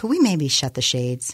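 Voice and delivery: ordinary talk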